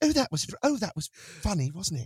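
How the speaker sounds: pleased, amused remark muttered to oneself. Describing Zoom audience reactions to a voice performance: imitating an audience member. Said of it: "you'll hear this".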